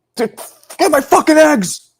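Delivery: put-on shrill, very high, furious shrieking scream. Describing how someone wakes up angry, imitating him screaming. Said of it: "He's just screaming".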